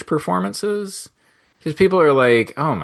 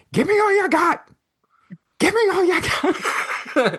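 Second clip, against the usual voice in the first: put-on frantic, unhinged screaming, very high. Retelling a film scene where the actor blurts it out: imitating Al Pacino screaming.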